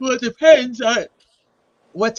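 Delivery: speech stretched and spoken through a yawn. Asked on stream whether they can join by phone, answering while yawning. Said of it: "you're yawning. I thought you were crying".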